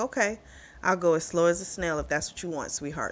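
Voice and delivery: ordinary talk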